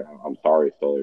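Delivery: ordinary talk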